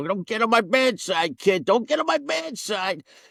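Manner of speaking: very high, slow, drawling cartoon character voice. Retelling what a coworker with a cigar would say: imitating a cigar-chomping coworker, cartoonish. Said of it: "Like a cartoon character".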